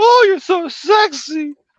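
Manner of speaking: very high, loud, fake girly voice. Explaining why they avoid female parts in collabs, demonstrating a fake girl voice. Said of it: "you don't want me doing a girl voice".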